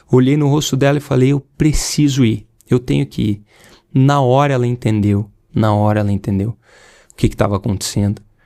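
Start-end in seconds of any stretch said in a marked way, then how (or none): none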